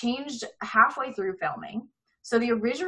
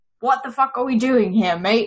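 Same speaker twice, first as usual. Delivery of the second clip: pirate voice, loud; 7 dB louder than usual. Describing a scene where a movie poster speaks to Johnny Depp: Jack Sparrow voice. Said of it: "in Jack Sparrow's voice".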